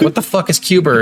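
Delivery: ordinary talk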